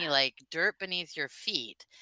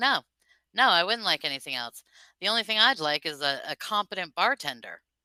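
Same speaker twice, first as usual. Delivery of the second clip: usual speaking voice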